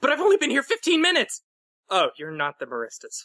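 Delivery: panicked, dazed voice. Voicing a unicorn who looks up at a visitor: panicked. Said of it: "looks up in kind of a panicked, uh, daze".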